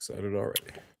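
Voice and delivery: breathy, flat deadpan with no enthusiasm. Saying you're excited to see something shown soon: no enthusiasm in voice. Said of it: "He said with no enthusiasm in his voice".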